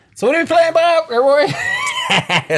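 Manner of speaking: loud, high-pitched excited shout.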